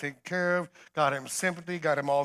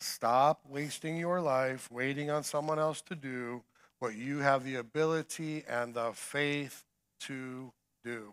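deliberate, measured, slower and softer delivery; 2 semitones lower, 5 dB quieter than usual. Speaker repeats the advice to the listener, saying it slower. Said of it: "Let me say it slower".

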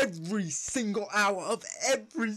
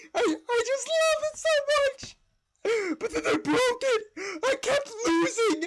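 very high-pitched, put-on tearful, teary voice; 14 semitones higher, 3 dB louder than usual. Lamenting that the game's PvP got broken, mock tearful. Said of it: "I'm sorry, I get a tear now".

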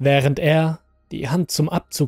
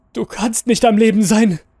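gasping, much higher; 7 semitones higher, 3 dB louder than usual. Narrator voicing a man staring at a masked young woman, gasping. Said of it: "Keuchte er".

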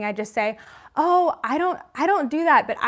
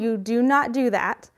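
ordinary talk

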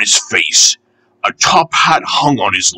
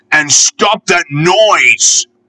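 high roaring bellow, sound drawn out long; 6 semitones higher than usual. Reading a story aloud, a character in Gordon's cab bellows an order. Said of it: "he bellowed".

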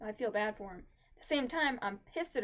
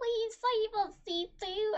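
put-on very high, slow, pleading old-man voice; 12 semitones higher than usual. Quoting old men begging to be saved: imitating old men pleading. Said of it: "They're old men".

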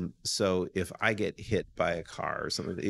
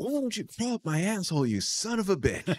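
put-on abrupt yell, very high; 13 semitones higher than usual. Recounting how a man suddenly yelled at another driver, retelling a sudden shout. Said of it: "suddenly he just shouts".

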